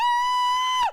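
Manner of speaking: very high, loud scream. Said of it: "and I go".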